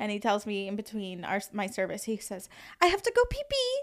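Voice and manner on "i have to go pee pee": put-on French accent, pitched very high. Retelling what a masseur said mid-session: imitating a French accent. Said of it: "so he's got this accent".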